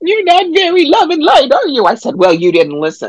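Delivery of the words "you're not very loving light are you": all upset, pitched way up, very high. Retelling what a woman said after being turned away: acting out her upset reply. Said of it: "she gets all upset and goes".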